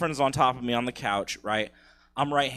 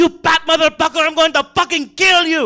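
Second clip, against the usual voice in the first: wild, put-on Filipino accent, screamed very high and loud; 13 dB louder than usual. Retelling how his ex's dad screamed at him, mock-screaming in Filipino accent. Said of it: "screaming in the craziest Filipino accent".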